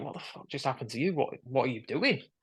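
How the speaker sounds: horrified, aghast, appalled, shocked tone. Retelling what a couple beside them said: imitating someone horrified. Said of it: "looking at me in absolute horror".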